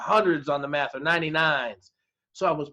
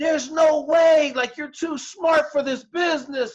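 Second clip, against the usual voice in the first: very high, shrieking screaming yell; 11 semitones higher, 4 dB louder than usual. Recalling a job interview where the interviewer yelled at the speaker, retelling a yell. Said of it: "he was yelling at me, screaming".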